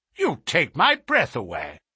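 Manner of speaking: plain reading voice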